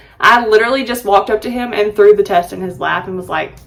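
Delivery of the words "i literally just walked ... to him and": ordinary delivery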